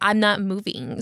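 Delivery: plain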